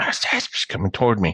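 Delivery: theatrical whisper. Retelling what a girl in a dream whispered: imitating a whisper. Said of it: "she's still whispering to me in the dream".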